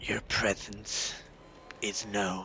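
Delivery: faint, slightly ghastly, eerie ghostly whisper. Game master voicing a voice from the indentured servants, slightly ghastly voice. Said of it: "You hear a slightly ghastly voice".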